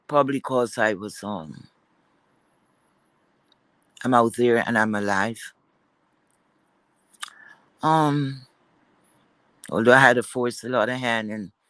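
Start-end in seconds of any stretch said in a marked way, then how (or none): 0.1-5.5 voice thick with emotion. Talking about just getting out of the hospital, emotional. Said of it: "I don't know why I'm emotional right now".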